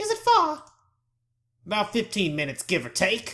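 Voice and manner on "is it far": high-pitched put-on feminine voice. Voicing a woman in a scene, now in a put-on feminine voice. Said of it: "I'll give her more of a feminine voice now".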